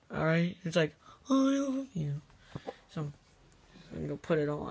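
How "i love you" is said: silly, high puppet character voice. Planning to disrupt a date in a puppet costume, speaker tries a puppet impression. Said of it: "I just gotta do my puppet impression".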